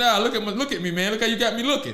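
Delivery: ordinary talk, nothing marked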